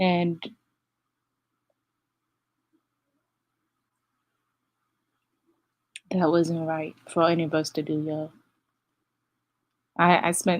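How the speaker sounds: voice catching and choking up, holding back tears. Host telling listeners what really happened, choking up near tears. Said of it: "sorry, I'm not gonna cry".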